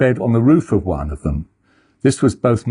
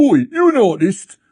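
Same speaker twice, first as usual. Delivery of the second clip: very high, goofy shouted call; 10 semitones higher, 3 dB louder than usual. Retelling shouting down from a window to a man loading a car; retelling a silly shout. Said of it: "shouted down in a silly voice".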